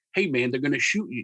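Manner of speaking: plain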